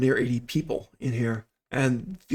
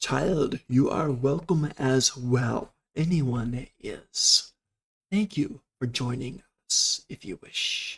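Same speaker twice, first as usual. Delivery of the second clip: loud, clear, precise voice. The narrator voices a being heard inside the listener's head: loud clear Tylogan voice. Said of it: "very loud, very clear, very precise".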